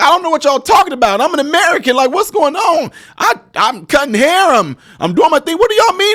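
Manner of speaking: tearful, bewildered whimpering, very high, wailing. Acting out an imagined reaction to surprising news: mock crying and weeping. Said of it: "I would probably be on there crying and weeping".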